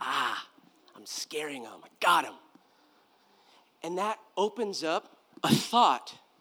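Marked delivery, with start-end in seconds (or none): 0.0-2.3 low, pleased, self-satisfied devil voice. Asking whether the devil loves fear, then voicing the devil. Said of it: "do you think the devil loves that?".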